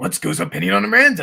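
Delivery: loud character voice with the gruffness stripped. Reading a listener's question to show the voice with the gruff taken out. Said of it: "But if I take out the gruff".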